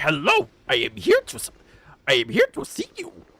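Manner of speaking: very high, squeaky, swooping up and down monster voice. Joking that characters look like Grover: bad Grover voice. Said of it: "I could never get Grover's voice right".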